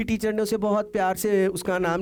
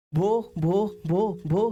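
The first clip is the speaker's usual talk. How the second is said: stammering on first syllable, much slower. Storyteller voicing a girl struggling to get a word out, stammering. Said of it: "शी begin टू stammer".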